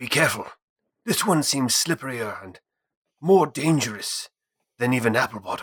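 hushed, half-whispered voice. Warning a companion in character about a dangerous figure: half-whispering in character. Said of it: "Pine will try to whisper".

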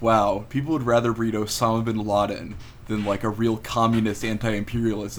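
ordinary talk, nothing marked

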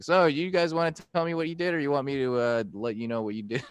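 ordinary delivery

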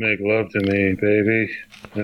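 put-on flat, passionless delivery. Retelling a passionless movie sex scene: imitating Tara Reid's flat delivery. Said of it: "she's just like".

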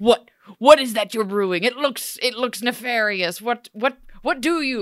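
put-on loud, declaimed in weird old English. Retelling a scene where Robin questions what she is brewing: Robin's weird old English way. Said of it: "he says in this weird old English way".

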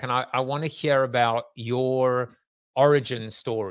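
ordinary talk

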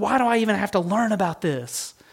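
high, play-acted, distressed, upset voice. Retelling her upset question about studying hard history: imitating someone upset. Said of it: "she got so upset".

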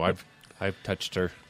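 very quiet, hushed, put-on, faintly creepy tone. Answering whether the actress is real, mock creepy tone. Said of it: "it sounded a little creepy the way you said it".

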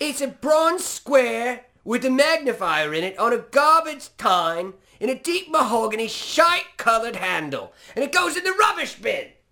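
very loud, very high, shrill, furious chef rant, rising. Asked to say the description like a famous English chef, do it imitating an angry English chef. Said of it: "say it like you're a particular English chef known for his anger".

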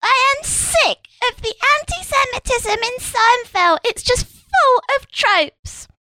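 very high, small, slow little voice. Imagining a writer complaining about Seinfeld: funny little Julie Burchill voice. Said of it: "in her funny little Julie Burchill voice".

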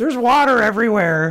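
mock voice, drawn out and pitched way up high. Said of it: "That's my Lowry voice".

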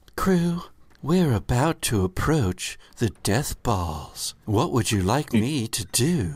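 automated computer announcement voice. The narrator voices the ship's computer alerting the crew, ship computer voice. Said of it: "Can this be a new default computer voice".

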